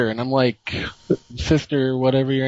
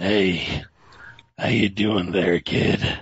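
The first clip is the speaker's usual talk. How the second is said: put-on one-eyed pirate voice, lower; 5 semitones lower than usual. Retelling how a man popped his head into the stall: imitating stranger, pirate-like voice. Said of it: "Sounds like he has a patch on his eye".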